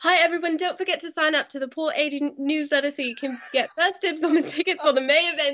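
put-on British accent. Asked to try it, speaker reads a newsletter announcement: British accent. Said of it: "try that with your British accent".

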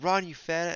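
high, play-acted frantic yelling. Retelling how a gym teacher shouted at a slow runner: imitating a teacher yelling. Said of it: "she was yelling at me like crazy".

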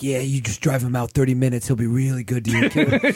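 sly, menacing, malicious, nefarious-sounding, sinister voice. Imitating a guy who offered to watch the speaker's cat, in a malicious, nefarious voice. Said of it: "some guy who talks like that".

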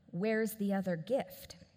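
imitated whisper. Retelling what a staff member asked at a baby shower: imitating a whisper. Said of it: "whispers in my ear".

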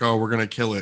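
plain

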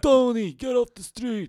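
New York street accent, pitched way up. Naming a Boston podcaster's show, in a mock New York accent. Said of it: "Is that how they talk?".

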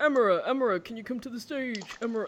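put-on strange, thick UK regional accent, laid on thick. Retelling a lady calling someone to the stage, in a thick weird british accent. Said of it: "she had this thick, weird British type of accent".

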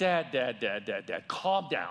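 slow, calming, soothing delivery with a repeated word. Retelling how Lexi reacted to his story: imitating Lexi calming him down. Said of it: "She did something like this".

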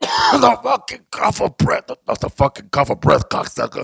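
very high, rough, raspy rant. Joking after coughing on air: Joey Diaz impression. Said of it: "I sound like Joey Diaz now".

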